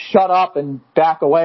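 ordinary talk

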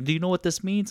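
put-on high yelling. Retelling how his dad lectures him, imitating dad yelling. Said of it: "he starts yelling at me".

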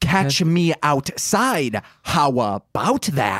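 slow, deliberate put-on voice. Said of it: "my [name] impression".

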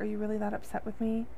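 soft, hushed half-whisper, stage whisper. With grandma and sister in front, retelling how he half-whispered to the speaker. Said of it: "he's like whispering".

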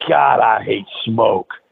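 slow, dragged-out, rough, creaky voice. Retelling what a tablemate said about smoke in a restaurant: Hawk's voice. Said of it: "with that voice of his".

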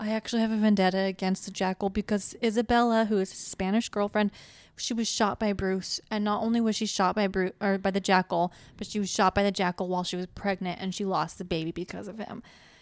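normal talking voice

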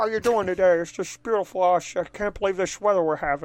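loud, high-pitched, chatty voice. Retelling what a regular customer says: Todd McFarlane voice. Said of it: "He sounds just like him".

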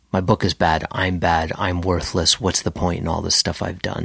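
ordinary delivery

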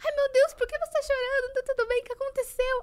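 put-on very high, worried, fretting small-child voice. Retelling how little kids on a school bus reacted: imitating worried little kids. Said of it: "E as criancinhas".

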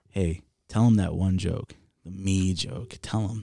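ordinary talk

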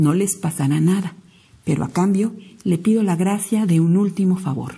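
plain reading voice

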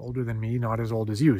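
ordinary talk, nothing marked

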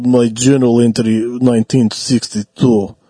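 put-on Russian mad scientist voice. Imitating a horror game voice actor: Russian mad scientist voice. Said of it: "the Russian accent".

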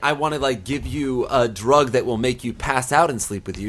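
ordinary talk

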